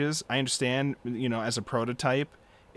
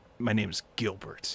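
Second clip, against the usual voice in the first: mock, super serious delivery; 3 semitones lower, 3 dB quieter than usual. Retelling a character's introduction line: imitating a super serious delivery. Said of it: "it's a super serious moment".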